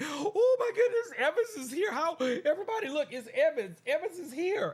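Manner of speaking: play-acted, very high, loud, swooping fanboy gushing. Retelling own reaction when evans popped into the stream: imitating own excited fanboy reaction. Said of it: "I was all excited. I was like a fanboy".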